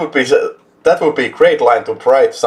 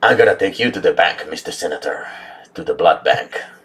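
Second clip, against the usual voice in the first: very low-pitched voice kept flat and even; 7 semitones lower, 4 dB quieter than usual. Quoting a favorite movie line after being asked for a Seagal voice: Steven Seagal voice. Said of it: "I need a Seagal voice out of you".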